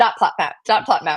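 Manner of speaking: fast, rapid tongue-twister pace. Trying a tongue twister after asking for it fast: saying it fast. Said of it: "Say it fast".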